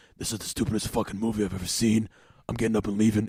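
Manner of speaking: really raspy, scratchy dad voice. Retelling what a dad at the movies said, imitating his raspy voice. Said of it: "he had this really like raspy voice".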